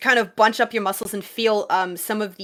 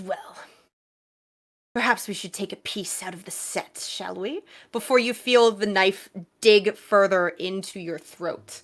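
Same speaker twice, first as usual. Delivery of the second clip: quieter, menacing whisper; 4 dB quieter than usual. Voicing an attacker whispering in a player's ear: whispering in your ear. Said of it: "that same voice just kind of whispering in your ear".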